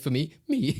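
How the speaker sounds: high squeak, squeezed out through laughter.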